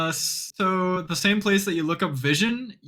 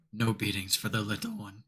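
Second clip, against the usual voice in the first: hushed half-whisper, dropped very low; 7 semitones lower, 8 dB quieter than usual. Voicing a character who tries to half-whisper to the group; trying to half-whisper. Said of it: "Nur tries to whisper".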